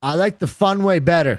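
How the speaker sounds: loud, high-pitched yelling. Reacting to another speaker's plan for the show, yelling. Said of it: "I'm just yelling".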